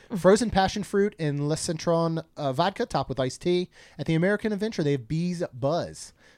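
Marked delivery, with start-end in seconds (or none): none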